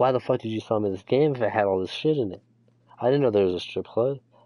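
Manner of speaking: ordinary delivery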